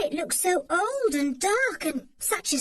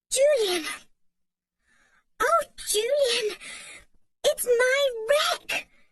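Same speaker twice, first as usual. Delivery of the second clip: high excited outburst, almost too thrilled to speak; 5 semitones higher than usual. A girl cries out to Julian in a high, excited voice. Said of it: "she cried in a high, excited voice".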